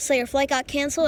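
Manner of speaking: usual speaking voice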